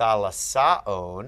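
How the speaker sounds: very slow thalassaon with the final on stressed. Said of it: "why'd we move all the way here?".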